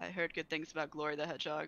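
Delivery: flat, expressionless. Character looks at her after hearing about the hedgehog races; deadpan. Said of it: "I just kind of like deadpan look at her and be like".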